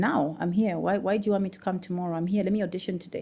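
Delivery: ordinary talk, nothing marked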